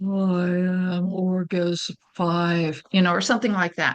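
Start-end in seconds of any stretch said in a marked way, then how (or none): 0.0-2.8 low, sinister demonic voice, very slow. Explaining how different speakers sound and acting out what one of them might say; low demonic sounding voice. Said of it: "monotone robotic sounding voice".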